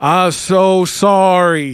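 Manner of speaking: mock drunken voice, slurred, loud and high. Retelling spilling a drink into a child's shoe: acting drunk. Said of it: "I just drunkenly go".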